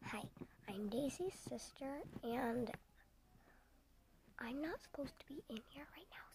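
partly whispered, kind of whispering. Daisy's sister, not supposed to be in here, introducing herself half-whispering. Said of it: "so that's why I'm kind of whispering".

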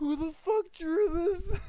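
very loud outburst, cracking up helplessly. Streamer reacting to a funny drawing of Hagrid, laughing uncontrollably. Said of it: "I can't keep laughing at this".

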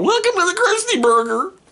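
very high-pitched, loudly belted-out voice. Imitating the weird kid from The Simpsons at the Krusty Burger. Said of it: "sounds like that weird kid from The Simpsons".

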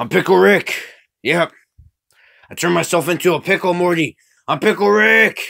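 high, very loud character-voice yell. Speaker quoting a cartoon line to a friend, Pickle Rick impression. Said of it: "Something like that".

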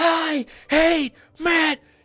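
acted-out child's pretend yell. Reacting to a video of a kid in his room, retelling a pretend yell. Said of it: "He's pretend yelling".

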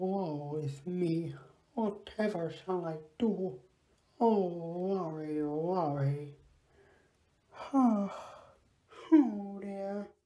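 put-on crying character voice. Playing the Count in a skit with Krystal and Pooh Bear, crying. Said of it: "stop crying".

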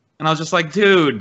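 ordinary delivery

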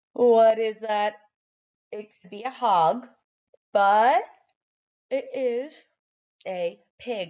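yawning while talking. Leading a letter-tapping spelling exercise, yawning. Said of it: "I'm yawning too much".

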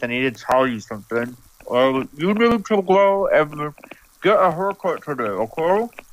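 speaking while brushing teeth. Speaker telling Macey something while brushing their teeth, talking while brushing teeth. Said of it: "while I'm brushing my teeth".

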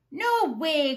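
stubborn, defiant growling voice. Narrator reads a character answering his mother, growling. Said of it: "growled Whiffy Wilson".

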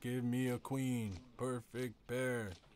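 sarcastic, slow, drawn-out mock dealer call.

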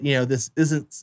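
plain

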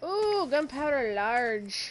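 slow, loud, oddly drawn-out delivery.

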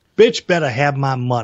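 ordinary talk

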